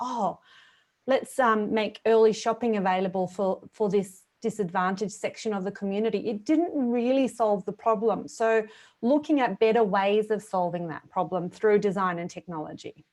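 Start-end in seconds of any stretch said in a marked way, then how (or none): none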